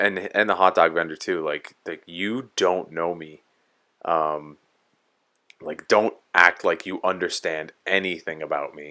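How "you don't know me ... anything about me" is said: ordinary delivery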